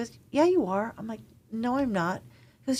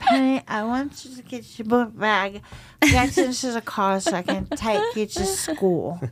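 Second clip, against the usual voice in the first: put-on heavy, slurred, sloppy drunk speech; 4 dB louder than usual. Speaker imitates his mother talking to Penny, imitating a slurred drunk voice. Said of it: "very slurry".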